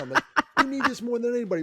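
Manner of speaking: very high-pitched yelling shout. Retelling yelling at kids walking out before his talk, retelling a yell. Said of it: "I literally started yelling".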